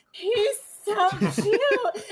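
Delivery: put-on tearful, sobbing drunk gush, high and loud. Retelling a drunk woman gushing over Baby Yoda, imitating drunk crying. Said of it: "she was just crying about this child".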